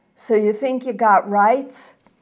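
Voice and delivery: loud, quick, contemptuous sneer. A man with a gun answers the barefoot narrator's demand for a search warrant: sneering. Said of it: "He sneers".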